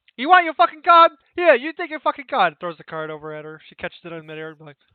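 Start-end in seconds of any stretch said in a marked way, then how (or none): 0.2-2.6 very loud, high-pitched, heated furious yelling. Acting out a character arguing over a card, angry quarrel. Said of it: "Italian couple dispute".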